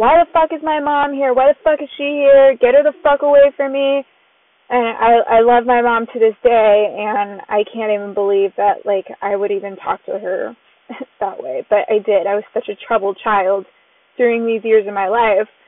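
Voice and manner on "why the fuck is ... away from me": mock hostile, angry yelling. Recalling what they yelled as a troubled child, retelling a yell. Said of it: "I'm like yelling".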